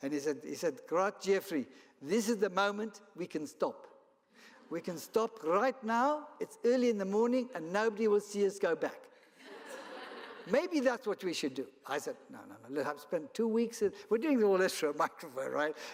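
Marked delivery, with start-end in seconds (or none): 0.9-11.7 attempted put-on South African accent, pitched up. Quoting the man who'd been training him, talking to Jeffrey; best South African accent. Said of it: "use my best South African accent".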